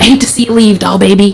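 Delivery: put-on rough, gruff South Philly accent. Speaker quoting their father at goodbye, gruff south philly accent. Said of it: "in his gruff South Philly accent".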